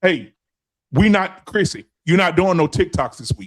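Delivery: put-on stern, hard man voice. Acting out a stern man who bans chrissy's tiktoks: acting out a stern, hard man. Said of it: "he hard as a rock?".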